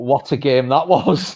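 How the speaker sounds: ordinary talk, nothing marked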